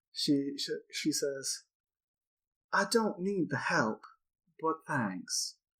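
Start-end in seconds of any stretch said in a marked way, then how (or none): 2.8-5.6 put-on voice with Southern accent. Voicing Yasin turning down an offer of help: Yasin's Southern accent. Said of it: "I gotta remember her accent".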